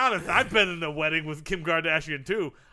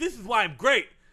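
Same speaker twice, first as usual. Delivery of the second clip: normal talking voice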